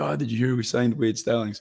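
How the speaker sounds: ordinary delivery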